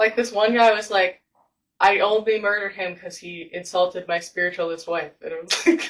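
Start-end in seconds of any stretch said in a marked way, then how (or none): none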